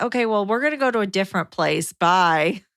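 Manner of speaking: slow, passive-aggressive, dismissive tone. Retelling someone's reply about going to a different place: imitating a passive-aggressive reply. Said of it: "was passive-aggressive and being like".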